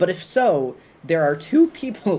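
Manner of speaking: slow delivery, voice breaking partway through. Talking to the YouTube chat about two people named Solar, voice cracking. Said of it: "voice crack".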